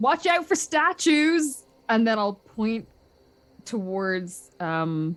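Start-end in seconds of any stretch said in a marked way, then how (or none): 0.0-1.6 full-throated, high-pitched yell. Shouting a warning up a corridor in character: yelling in character. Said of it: "I will just yell it".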